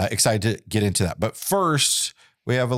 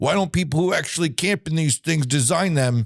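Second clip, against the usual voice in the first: grumpy, raised-pitch griping, complaining tone; 5 semitones higher than usual. Imitating RVers complaining about camper design: grumpy YouTube commenter voice. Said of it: "that's the grumpy YouTuber comment voice".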